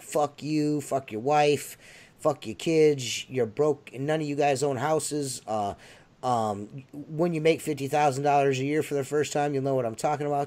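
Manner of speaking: plain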